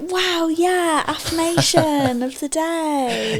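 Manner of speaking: gushing, eager, highly excited, "day" drawn out. Showing the other speaker how to introduce the affirmation with more excitement: excited. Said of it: "Bit more like".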